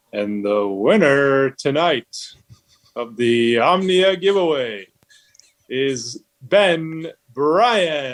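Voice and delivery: very slow, game-show style TV announcer voice. Announcing a giveaway winner when asked for an impression: Don Pardo announcer voice. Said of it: "a Don Pardo kinda deal".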